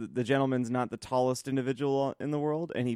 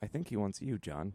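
mock grave, oddly solemn, quiet, somber delivery; 4 semitones lower, 8 dB quieter than usual. Retelling what someone said to the speaker at the register, imitating a somber tone. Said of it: "Shane very somberly".

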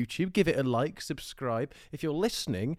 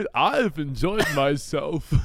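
put-on halting cadence, louder; 7 dB louder than usual. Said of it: "You said that like Christopher Walken".

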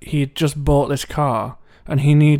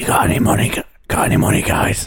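strained, throat-scraping, hard-to-hold put-on voice. Retelling how Chrissy would always come over, in Chrissy's voice. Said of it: "It's actually very hard to do that voice".

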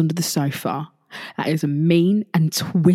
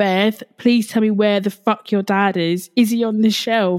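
mock frantic, high-pitched, full panic; 4 semitones higher than usual. Speaker Beth retells a man asking where her dad is: imitating someone in full panic. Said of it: "He's in full panic mode".

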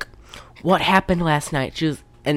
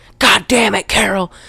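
loud, bawling yelling; 4 semitones higher, 5 dB louder than usual. Retelling a movie scene where the pimp yells at Carol: imitating a pimp yelling. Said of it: "He's yelling at her".

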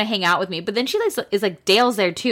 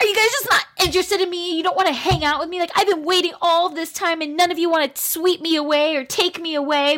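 put-on very high, aggrieved, ranting yelling; 9 semitones higher than usual. Retelling how a woman left someone in a side room and went to the guys, retelling her yelling at the guys. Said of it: "she goes and yells at the guys".

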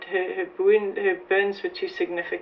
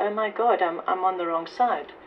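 ordinary talk

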